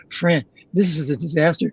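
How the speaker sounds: usual speaking voice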